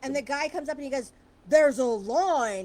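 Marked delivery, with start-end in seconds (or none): 1.5-2.7 angry, very loud scolding, line stretched out. Retelling a man in a checkout line who thinks someone cut, imitating an upset old man. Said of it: "he's getting upset because he thinks".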